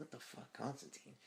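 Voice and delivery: soft, high-pitched, hushed whisper full of shock. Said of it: "he's like".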